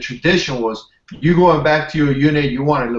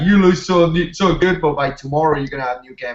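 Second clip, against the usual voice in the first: play-acted, sugary, backhanded tone dripping with sarcasm. Retelling what a first sergeant said at check-in: imitating a sarcastic remark. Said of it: "He was being sarcastic".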